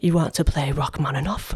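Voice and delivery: put-on Russian accent delivered in a cool manner. Retelling what a woman asked the speaker, in a cool Russian accent. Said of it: "you have to imagine a cool Russian accent".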